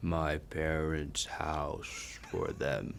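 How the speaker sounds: very drawn-out slow-motion speech, low and hushed. Answering a rapid-fire question in slow motion during a game, slow-motion speech. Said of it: "That is a little too fast".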